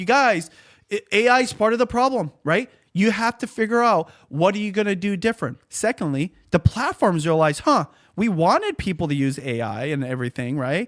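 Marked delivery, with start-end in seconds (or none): 0.0-5.6 high, raised, full yell. Speaker re-enacts what he tells creators whose views are dropping, retelling own yelling. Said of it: "That's why I'm yelling".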